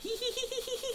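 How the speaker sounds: very high, soft, weird, creepy giggle.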